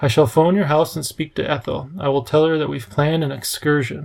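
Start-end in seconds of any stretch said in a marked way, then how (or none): none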